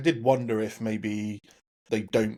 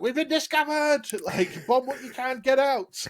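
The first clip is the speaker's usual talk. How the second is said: put-on very high, shrill shout in a Scottish accent. Retelling a scene from the episode: Docs shouting shrilly in a Scottish accent. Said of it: "very shrill when she's shouting, so to speak, with that Scottish accent".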